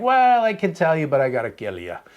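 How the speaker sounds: botched, terrible put-on Irish brogue. Speaker retells what a man at Whiskey Wonderland answered: bad Irish accent. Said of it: "that was more of an Irish accent".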